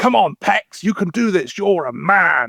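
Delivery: high, shouty, pushing, egging-on tone. Describing a woman who mimics whoever she's with, quoting her with the Kang: imitating someone shouting. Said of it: "she's very shouty".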